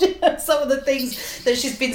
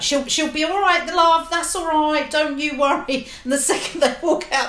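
put-on grandmother voice, higher pitch; 4 semitones higher than usual. Speaker imitates a woman whose other side comes out like Catherine Tate's Nan: Catherine Tate's Nan voice. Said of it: "a bit like the nan in Catherine Tate".

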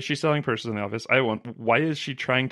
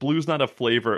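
usual speaking voice

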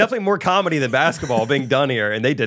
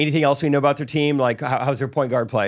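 ordinary delivery

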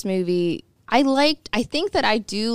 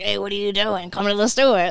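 put-on homeless man voice. Describing how the clown in the film sounds, doing a Tim Curry impression. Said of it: "He sounds like a homeless guy".

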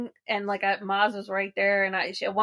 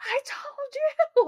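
play-acted screaming, pitched way up, very high. Retelling watching a match win as predicted: retelling own screaming. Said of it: "screaming that".

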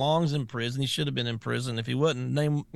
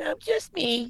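put-on very high voice like a six-year-old girl. Acting out a questioning, imitating Blasey Ford as a little girl. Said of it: "You sound just like her".

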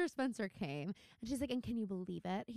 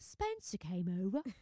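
bad, clumsy, unconvincing put-on British accent; 2 semitones lower than usual. Quoting what Ren said when he called Melissa: Ren's line in bad British accent. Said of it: "not a good representation of my British accent".

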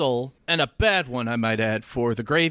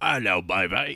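put-on Australian accent, much lower; 7 semitones lower than usual. Taking his turn as friends trade silly accents, a put-on Australian accent. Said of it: "I'm Australian for some reason".

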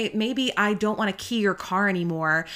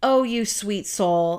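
put-on condescending tone, slower. Retelling Justin's reply to Ernest's question: mock-condescending, as Justin. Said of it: "so condescending".

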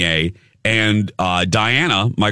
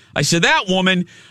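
ordinary delivery

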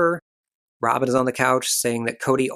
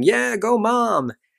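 mock very high, raspy, rough whooping cheering shout; 10 semitones higher than usual. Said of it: "Mykelti starts shouting, yelling".

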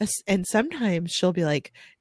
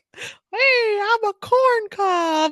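very high, slow, drawn-out character voice. A mom retells voicing things in a picture for her child: talking corn cob voice. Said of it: "now do the corn's voice".

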